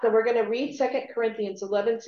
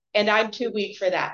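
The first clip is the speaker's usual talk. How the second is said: normal talking voice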